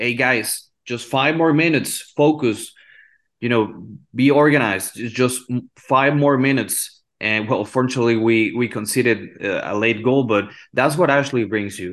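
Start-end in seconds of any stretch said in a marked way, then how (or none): none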